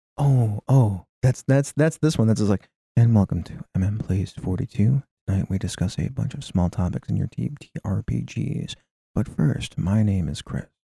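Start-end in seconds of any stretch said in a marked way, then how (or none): 3.0-10.7 quiet, whispery, hushed radio-style voice. Podcast host shows how NPR opens a show; NPR host voice. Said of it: "super quiet, like almost whispery voice".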